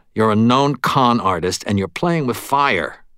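ordinary delivery

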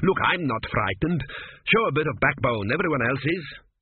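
ordinary talk

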